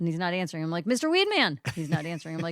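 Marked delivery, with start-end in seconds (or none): 0.9-1.6 very high, urgent shout. Retelling calling to someone who was not answering: imitating own yell. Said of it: "Why the fuck are you yelling at me?".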